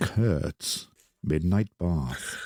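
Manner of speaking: lulling, soothing, calm voice. Speaking to someone who calls the voice very soothing, in a soothing voice. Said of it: "I might need to take a break if you keep doing that".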